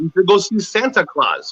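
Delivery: ordinary talk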